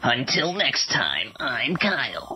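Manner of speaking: awful put-on radio announcer voice. Signing off with his name, saying it in an awful radio announcer voice. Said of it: "That's my awful radio voice".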